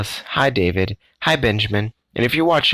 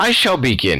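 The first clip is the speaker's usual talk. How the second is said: high little squeaky mouse voice; 3 semitones higher than usual. Reading a story aloud, the haughty mouse starts the riddles: squeaking. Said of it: "he squeaked".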